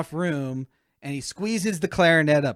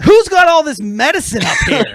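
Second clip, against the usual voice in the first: top-of-the-lungs yell, very high, very loud, shrill; 12 semitones higher, 12 dB louder than usual. Retelling how Dale shouted at the top of his lungs on a plane: imitating Dale shouting. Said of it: "he shouts at the top of his lung".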